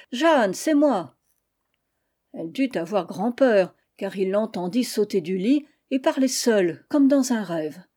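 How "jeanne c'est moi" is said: calling out, projected voice. Narrator reads a man calling through a locked door to the woman inside, shouting through a door. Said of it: "il cria à travers la porte".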